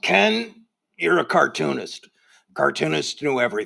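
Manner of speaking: gruff, rough, creaky voice. Recalling what a late great cartoonist once said to you, do Sam Gross's gruff voice. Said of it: "Said to me once in his gruff voice".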